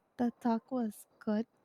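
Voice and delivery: nervous-sounding voice. Answering a question about how the talk went, sounding nervous. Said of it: "Why do you sound nervous?".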